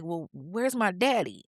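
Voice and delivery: imitated breaking down, distraught. Retelling how a woman, told her mother died, asks about her father: imitating someone breaking down. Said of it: "She's breaking down".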